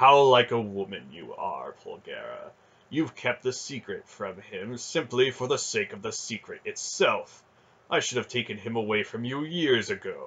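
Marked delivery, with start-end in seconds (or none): none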